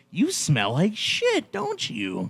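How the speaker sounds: very slow, drawn-out, swooping psycho voice. Retelling a movie scene to friends: imitating a psycho. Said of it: "Like a little psycho".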